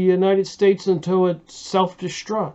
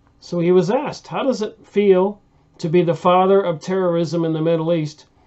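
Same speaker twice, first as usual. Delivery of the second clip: plain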